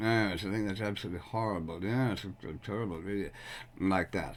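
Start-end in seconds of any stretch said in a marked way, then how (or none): 0.4-3.3 soft mumble, barely projected, under the breath. Showing how one can mumble a reply on television: mumbled. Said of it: "one can sort of mumble, you know, and you can say".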